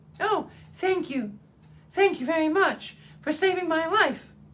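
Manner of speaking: tiny, very high, squeaky mouse voice. The freed field mouse comes up to the woodman, in a squeaky little voice. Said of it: "it said in a squeaky little voice".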